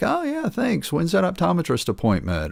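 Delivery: put-on very high, swooping, half-playful sarcastic jab. Retelling own past reply to people saying "you look great": retelling a half-sarcastic joking reply. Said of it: "half playfully, half sarcastically, jokingly respond".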